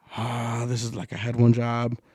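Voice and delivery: put-on stressed crying. Retelling how their partner reacted while they were throwing things out, imitating stress crying. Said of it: "she starts like stress crying like".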